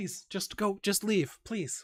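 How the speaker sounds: weak, small, very high pleading voice. Voicing a weak dragonborn answering a player's question: pleading. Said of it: "how many of you are there in here?".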